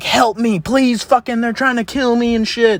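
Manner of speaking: put-on panicked screaming, high and terrified. Retelling how Corey ran into the backyard yelling for help, imitating Corey screaming in terror. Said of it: "screaming like he's about to get murdered".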